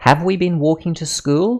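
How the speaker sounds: pitch rises at the end on "school". Reading a practice question in an intonation lesson: rising pitch on final school. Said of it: "My voice ends higher than how I read the first part of the sentence".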